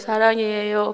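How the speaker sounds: put-on weak, near-dead voice. Retelling answering mother through the door, in a weak, dying voice. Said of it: "다 죽어가는 목소리로".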